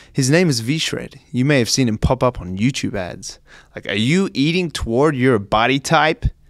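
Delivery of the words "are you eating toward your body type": attempted put-on American accent. Acting out V-Shred in his YouTube ads, V-Shred impression in an attempted American accent. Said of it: "That's my attempt at an American accent".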